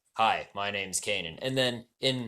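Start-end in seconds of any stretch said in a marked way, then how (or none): 0.2-1.4 drop into deep man's voice. Comparing how a character sounds across two shows, deep Kanan voice. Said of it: "he's got this deep voice and he's he's like".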